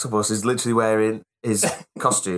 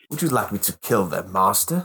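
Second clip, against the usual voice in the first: put-on sassy killing machine voice. Quoting the character after guessing it: HK-47 voice. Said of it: "H K forty-seven".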